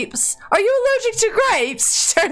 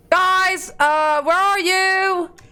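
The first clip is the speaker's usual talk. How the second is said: high, drawn-out, loud calling out; 5 semitones higher than usual. Voicing a character entering a building to find everyone: shouting for everyone. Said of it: "shouting as she's coming into the building".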